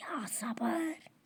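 soft, voiceless, pleading whisper.

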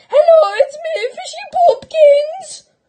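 shrill, very high, loud, drawn-out squeal. Phoning a friend while pretending to be Fishy Boopkins: Fishy Boopkins voice. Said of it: "I'm perfect at being Fishy Boopkins".

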